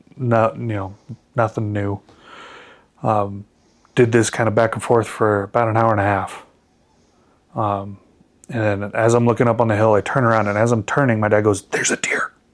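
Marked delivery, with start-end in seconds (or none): 11.6-12.3 put-on whisper, quieter. Retelling how dad spotted a deer: imitating dad whispering. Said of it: "Now your dad whispers?".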